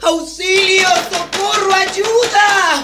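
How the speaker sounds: very high, shrill, loud shouting. A woman cries out for help, shouting for help. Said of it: "Por más que grite".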